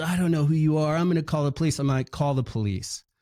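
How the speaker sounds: fast, agitated, indignant, worked-up angry outburst. Retelling how a man reacted after the speaker took his briefcase, mock-angry. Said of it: "the guy was just acted all angry".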